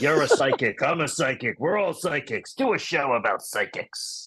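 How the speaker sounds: put-on elderly grandfather voice. Retelling a phone call with a grandfather, impersonating the grandfather. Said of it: "I'll try to do my impersonation of him".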